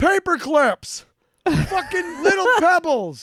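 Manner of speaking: very high, loud shouted rant. Speaker acts out a man running Reese's, imitating someone shouting. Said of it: "he's literally just shouting".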